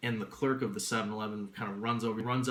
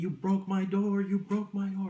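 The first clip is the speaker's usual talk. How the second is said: mock shrill, very loud, high-pitched furious yelling; 10 semitones higher, 5 dB louder than usual. Retelling how a man came over about his broken door: imitating a man yelling. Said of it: "he comes over and he's yelling".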